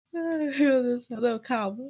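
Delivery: weepy, tearful, crying voice. Speaker apologizes live for being very emotional, tearful. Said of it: "Tá chorando".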